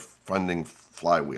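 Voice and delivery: slow, careful enunciation of funding flywheel. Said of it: "Those are hard words to say".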